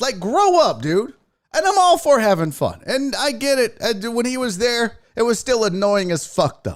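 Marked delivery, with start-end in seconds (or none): none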